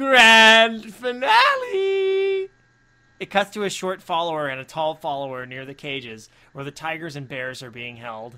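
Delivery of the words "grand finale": very loud, very high, crazed psychotic screech. Narrator reading Happy's line over the walkie-talkie, in a psychotic voice. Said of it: "says in a psychotic voice".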